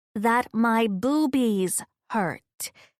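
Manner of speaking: very slow, drawn out, every word weighted. Telling Amber, who is watching Scandal, very slowly and meaningfully. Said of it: "I say this very slowly and meaningfully".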